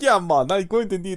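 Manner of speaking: imitated Indian accent. Retelling ordering a pizza, the speaker slips into an Indian accent.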